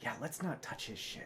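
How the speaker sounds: very quiet, small, tiny, hushed whisper. Narrating to a player walking away, voicing a voice they hear, small whispered voice. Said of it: "you hear a small like whispered voice".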